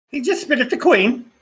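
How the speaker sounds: high, shrill comedic woman's voice. Voicing the figure behind the door slot, answering the agents: female Monty Python character voice. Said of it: "Did you just turn into a female Monty Python character?".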